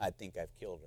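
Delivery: put-on trembling voice. Retelling a husband's phone call to the pastor, imitating a trembling voice. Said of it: "saying with a trembling voice".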